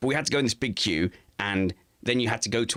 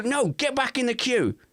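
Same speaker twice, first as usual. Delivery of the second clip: shrill, very high, pitched-up shout. Retelling how someone yelled at a woozy man in the queue: imitating someone yelling. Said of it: "someone yelled at him".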